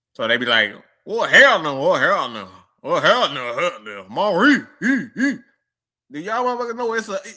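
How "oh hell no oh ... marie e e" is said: loud, drawn-out, exaggerated country Atlanta Georgia drawl. Imitating how country folks from Atlanta pronounce a name: country Georgia accent.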